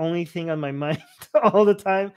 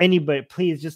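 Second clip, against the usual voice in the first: put-on desperate begging voice; 3 dB louder than usual. Acting out Arjun begging for guidance: imitating a desperate plea. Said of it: "so desperate for any kind of guidance".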